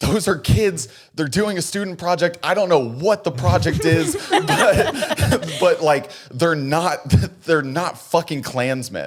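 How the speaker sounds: frantic, panicked, high and loud freaked-out voice. Retelling how a man ran over to the cops: imitating someone freaking out. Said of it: "he starts freaking out".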